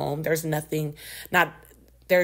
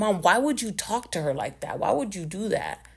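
put-on furious, angry scolding tone; 4 semitones higher than usual. Retelling a brother scolding Mom, imitating an angry brother. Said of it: "He was so fucking pissed".

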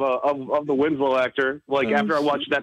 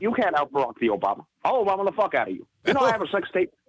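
showy put-on voice, high and swooping; 5 semitones higher than usual. Speaker shows off the voice they've fallen in love with: Obama voice. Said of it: "I'll do it in my Obama voice".

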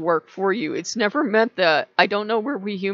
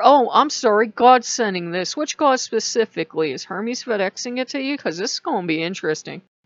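ordinary talk

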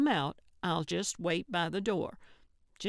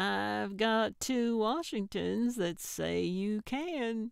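slyly pitched voice; 3 semitones higher than usual. Gertrude to Norman, holding out two dollar bills, sly. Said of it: "she said slyly".

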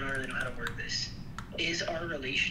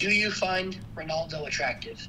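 ordinary talk

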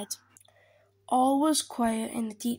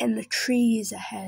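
ordinary delivery, nothing marked

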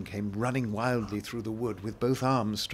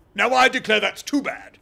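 very loud, very high, shrill, rough passionate outburst; 11 semitones higher, 11 dB louder than usual. Interrupted by his listener, he cries out in sudden passion. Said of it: "Humpty Dumpty cried, breaking into a sudden passion".

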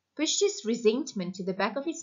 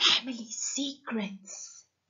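exaggerated, theatrical stage whisper meant to carry; 4 dB quieter than usual. Narrator reading Julia answering Pamela's question, stage whisper. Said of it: "said in a stage whisper".

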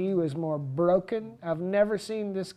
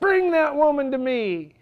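loud, high, raised, commanding voice; 8 semitones higher, 8 dB louder than usual. Retelling a command during ministry with people screaming: imitating own raised voice. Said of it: "I raised my voice".

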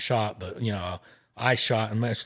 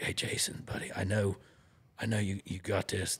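hushed whisper, quieter; 7 dB quieter than usual. Retelling how George whispered encouragement in the speaker's ear: imitating George whispering. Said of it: "George comes back down and whispers in my ear".

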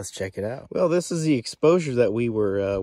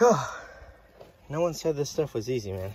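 puffing and winded, short of breath; 3 semitones higher, 3 dB quieter than usual. Mid-work and talking to viewers, the speaker is out of breath. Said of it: "I'm out of breath".

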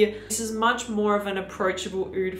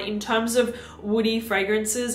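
ordinary talk, nothing marked

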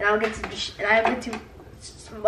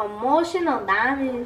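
badly done put-on Spanish accent; 2 semitones higher than usual.

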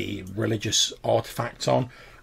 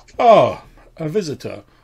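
jolly cultured gentleman's voice, loud and swooping; 5 semitones higher, 10 dB louder than usual. Game master voicing a greeting to a visitor among dancing skeletons: jolly cultured gentleman's voice. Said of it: "a rather jolly, ... sort of cultured gentleman's voice says".

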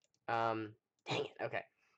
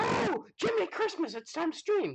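very high, loud, sudden panicked squeal. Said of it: "I looked up the clock and I was like".

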